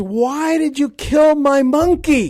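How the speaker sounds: high, loud put-on scream. Retelling a soldier screaming after his monkey was shot: imitating someone screaming. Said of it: "he starts screaming at Laz".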